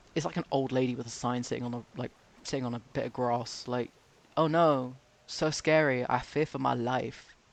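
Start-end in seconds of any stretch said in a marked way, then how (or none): 4.3-7.2 very slow, sarcastic, mocking feigned terror. Mocking critics of protesters who call a sign-holder scary: sarcastic mock fear.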